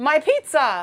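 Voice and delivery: very loud, high-pitched shouting cry. Telling a made-up story of a baker tripping: acting out a baker's cry. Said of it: "and he's like".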